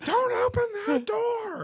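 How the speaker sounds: play-acted very high, slow, drawn-out yell. Retelling a kid yelling at grandma: imitating a kid yelling. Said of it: "you're yelling at your grandma".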